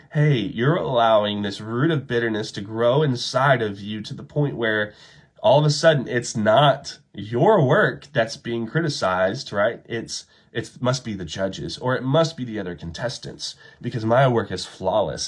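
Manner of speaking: ordinary talk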